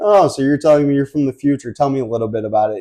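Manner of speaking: put-on patronizing, condescending, talking-down tone. Retelling a movie scene where cops question a man: imitating condescending cops. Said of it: "talking down to him".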